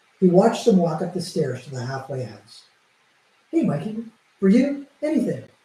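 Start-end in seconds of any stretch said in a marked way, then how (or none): 3.5-5.4 chipper voice perking up further, extra chipper, high. [name] answers Mike, who wants a favor, in an extra chipper voice. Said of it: "her already chipper voice picking up even more".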